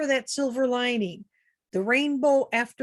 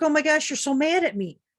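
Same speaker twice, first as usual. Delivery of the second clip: flustered, panicky, anxious outburst; 4 semitones higher than usual. Passenger retelling the driver's reaction to a missed lane change, imitating a panicky driver. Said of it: "she starts to get panicky".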